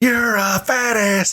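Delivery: high, drawn-out mock jeering shout. Retelling a fan's taunt at a wrestling match: imitating someone yelling. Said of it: "dude kept yelling".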